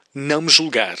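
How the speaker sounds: ordinary talk, nothing marked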